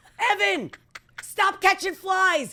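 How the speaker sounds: put-on very high, bossy, top-of-lungs scream. Acting out him yelling at a made-up kid named Evan, imitating him screaming. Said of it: "he's screaming at the top of his lungs".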